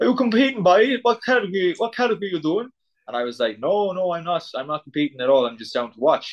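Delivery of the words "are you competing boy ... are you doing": put-on thick Cork accent, much higher. Retelling what a tanned competitor asked him about competing, in a thick Cork accent. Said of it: "in a thick Cork accent".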